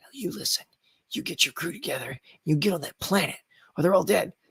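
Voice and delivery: soft, hushed acted stage whisper. Retelling a scene partner's line from a shoot, imitating a half-whispering actor. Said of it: "So she's like".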